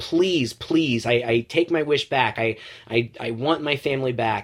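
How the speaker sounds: acted, mock, desperate pleading tone. Retelling a movie scene where Max pleads with Krampus, acting out a desperate plea. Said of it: "Max is pleading with him".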